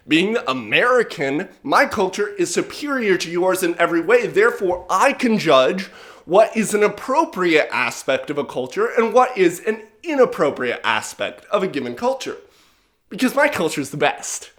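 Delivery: plain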